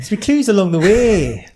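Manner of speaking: awful put-on Irish accent. Welcoming listeners to Destination X: bad Irish accent. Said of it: "that sounds awful".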